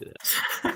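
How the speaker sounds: slow, quiet whispering.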